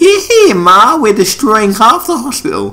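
put-on very high elderly Southern woman voice. A player calls out to Ma during a game; old southern lady voice. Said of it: "Why did I sound like an old southern lady?".

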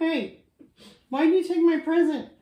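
loud, high, indignant and angry demanding holler. Speaker announces an angry Santa and plays him: angry Santa voice. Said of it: "Like angry Santa".

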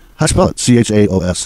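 ordinary talk, nothing marked

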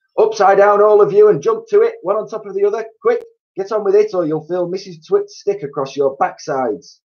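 fearsome, very high, barking voice. Narrator reading Mr. Twit ordering the monkeys, in his fearsome trainer's bark. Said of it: "he barked in his fearsome monkey trainer's voice".

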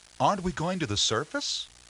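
meek, hesitant voice. The narrator presses the submarine's captain after his stern reply, timid. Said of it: "I timidly continued".

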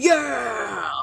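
enthusiastic, shouted cheer.

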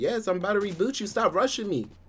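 irritated, with attitude. Asked by the other person whether they'll reboot them, annoyed, with attitude. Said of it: "now you got an attitude".

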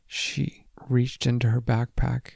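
ordinary delivery, nothing marked

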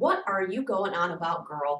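distrustful voice. A father questions his returning daughter Sarah, speaking suspiciously. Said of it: "her Pa said suspiciously".

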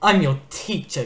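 words snarled out. Narrator reads Kestrel, the teacher, answering his pupil Clay, snarling. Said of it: "Kestrel snarled".

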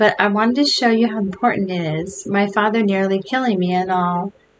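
ordinary delivery

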